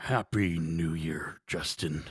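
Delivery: very low, quiet crime-boss voice. You greet your podcast host Justin as the show opens, doing a Kingpin impression. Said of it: "That's my Kingpin impression".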